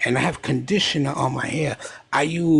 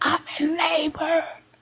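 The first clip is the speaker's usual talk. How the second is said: play-acted very high screaming cry. Retelling a phone call from his wife in labor: imitating his wife screaming. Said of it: "She's screaming".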